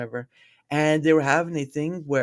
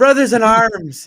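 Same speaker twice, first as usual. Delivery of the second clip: put-on Irish accent, higher and louder; 9 semitones higher, 11 dB louder than usual. Retelling an actor's scene where his Irish accent shows: Michael Fassbender impression. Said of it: "you could hear it as soon as he's coming out".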